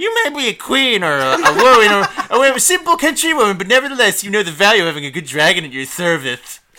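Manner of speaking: very loud, high-pitched put-on narrator voice. Rereading a passage aloud, the speaker tries it in a put-on reading voice. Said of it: "reading this in the wrong voice".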